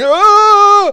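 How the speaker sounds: very loud, shrill, very high, drawn-out scream. Retelling how a passenger woke up in the car: imitating someone screaming. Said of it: "He's screaming".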